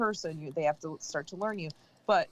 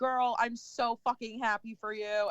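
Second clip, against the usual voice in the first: mock teary happiness in a higher pitch; 5 semitones higher than usual. Retelling a woman's reaction to the speaker's news, imitating her teary happiness. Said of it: "she got like teary".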